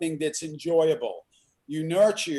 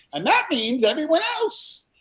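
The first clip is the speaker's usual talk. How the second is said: squeaky, very high funny voice; 12 semitones higher, 4 dB louder than usual. Retelling what he said back after being quoted to him, Jim Carrey voice. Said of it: "in his Jim Carrey voice".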